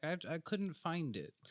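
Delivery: delicate, dainty, high little voice. Retelling what a man's wife said in a store: imitating a dainty wife. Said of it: "she's just real dainty".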